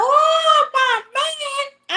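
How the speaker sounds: mock very high, shrill, crying wail. Acting out an imagined funeral scene with the mistress crying out: imitating a mistress hollering. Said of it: "she holler".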